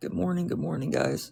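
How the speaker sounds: hoarse, scratchy, raspy, rough morning voice. Greeting your stream viewers at six in the morning, with a raspy throat. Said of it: "Sorry, I sound like a gremlin. My throat is still raspy".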